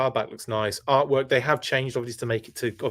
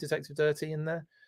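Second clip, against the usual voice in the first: ordinary delivery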